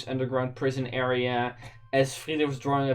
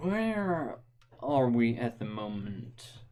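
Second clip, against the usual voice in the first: secretive, hushed half-whisper; 3 dB quieter than usual. A character approaches you from the back of the group and half-whispers. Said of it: "and simply whispers to you".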